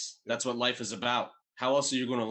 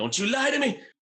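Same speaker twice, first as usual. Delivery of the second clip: acted-out, very high-pitched, flipped-out scream; 12 semitones higher, 4 dB louder than usual. Retelling a movie scene where he flips out: imitating someone screaming. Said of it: "He's screaming".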